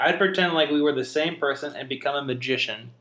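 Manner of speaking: ordinary talk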